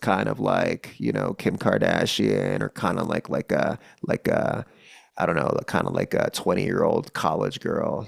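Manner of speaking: low, creak-heavy vocal fry register. Demonstrating the fry vocal register while explaining it, vocal fry. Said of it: "the part of our voice responsible for sounding like this".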